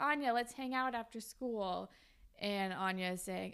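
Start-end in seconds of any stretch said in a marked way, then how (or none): none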